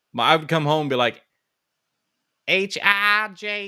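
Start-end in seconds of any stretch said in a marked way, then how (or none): 2.4-3.6 put-on high, childlike little-kid voice with West Virginia accent. Retelling greeting mom on coming home as a child, little kid's hillbilly accent. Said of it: "I was a little hillbilly".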